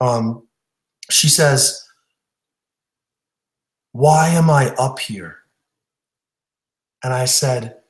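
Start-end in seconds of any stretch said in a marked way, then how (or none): 3.9-5.4 mock quiet speaking. Retelling a stage hypnosis subject's question after the show: imitating someone speaking quietly. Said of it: "pretty quietly".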